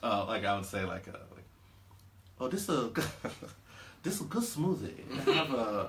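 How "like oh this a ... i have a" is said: slow, laid-on fake Chinese accent. Speaker shows how their accent bit starts, in a put-on Chinese accent. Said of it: "I'm gonna start with a re- legitimate Chinese accent".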